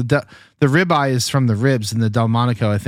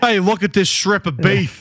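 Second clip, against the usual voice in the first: bad New York accent, pitched up, drifting Australian; 9 semitones higher than usual. Joking about how the New York strip got its name, in a bad New York accent. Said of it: "I don't even know how to do a New York accent".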